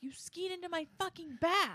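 put-on, high-pitched screaming. Retelling what a skier shouted at the man who hit her: imitating someone screaming. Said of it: "she was screaming at him".

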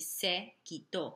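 stress on the last syllable of quitó. Explaining the spanish accent mark in se quitó: stress on -tó in quitó. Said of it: "more emphasis on pronouncing that O".

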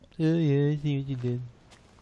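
teasing, mocking, parroted delivery. Repeating a friend's words back to show how they sound, mocking imitation of a friend. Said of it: "That's what you sound like".

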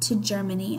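ordinary talk

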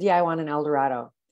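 cocky, self-assured, arrogant, assertive tone. Retelling asking a car salesman for an el dorado: imitating own arrogant tone. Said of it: "I said it real good, very arrogantly".

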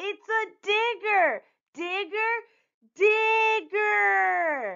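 very high, slow, stretched-out yelling. After two others dismiss her idea, a girl shouts. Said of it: "Usha shouted".

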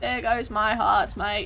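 slipping into Australian accent. Reacting to losing hearts during a boss battle: Australian accent. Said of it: "ignore my accent in this current moment".

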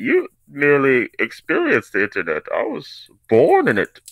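declaimed high-pitched with big swoops, put-on voice. Reading crypto mistakes aloud, then doing a Bane voice. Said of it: "what's my Bane voice?".

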